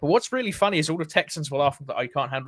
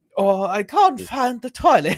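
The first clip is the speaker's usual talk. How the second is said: mock very drunk, loud, pitched-up voice; 6 semitones higher, 7 dB louder than usual. Describing a scene, the speaker acts out a really hammered Victorian: drunk Victorian impression. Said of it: "a really, really hammered Victorian just sitting there and being like".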